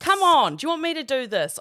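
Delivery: fed-up yelling. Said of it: "felt like yelling at her".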